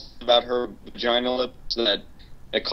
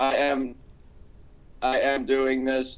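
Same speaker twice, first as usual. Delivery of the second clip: mechanical, toneless, flat, slow robot voice; 3 dB quieter than usual. Host sending a robot replacement for the episode: robotic voice. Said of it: "It really sounded like a robot right now".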